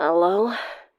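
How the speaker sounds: raspy, throaty, gravelly, rough. Reading a story aloud, a character answers the phone: gravelly voice. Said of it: "a gravelly voice answered".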